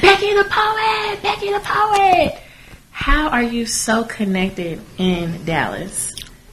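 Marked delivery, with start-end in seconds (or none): 0.0-2.4 high, slow, excited calling out. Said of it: "everybody was like".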